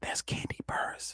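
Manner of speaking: hushed, very quiet, breathy, barely voiced whisper. Retelling his wife elbowing him in an airport, retelling a whisper. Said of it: "she whispers".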